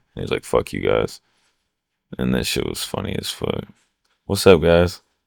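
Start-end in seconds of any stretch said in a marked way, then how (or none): 0.5-1.2 put-on fed-up, pissed-off angry outburst. Retelling what someone said after coming back from the gas station: imitating someone pissed off. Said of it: "all pissed off".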